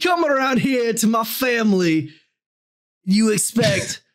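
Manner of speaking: put-on Italian accent. Voicing the devil answering back: put-on Italian accent. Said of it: "Do you think people talk like that".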